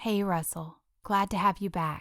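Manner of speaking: hushed, whispered voice. Narrator reading a mother's greeting while she holds her sleeping baby, whispering. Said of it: "Carrie whispered back".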